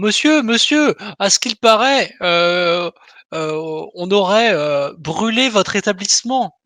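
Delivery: called out, stumbling a little over words. Improvising a scene at a door, calling out to a man; shouting. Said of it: "je hurle ça à plusieurs reprises".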